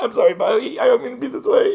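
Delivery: over-the-top emotional, very high-pitched voice. Speaking to Bobby during talk of a serious subject; mock-emotional. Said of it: "I'm just really emotional".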